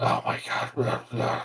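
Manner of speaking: put-on annoyed grumbling. Retelling how audience members reacted during a movie: imitating annoyed grumbling. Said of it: "kind of like a grumbling and just, like, kind of annoyed".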